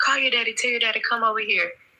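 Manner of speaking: put-on screaming. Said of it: "I started screaming".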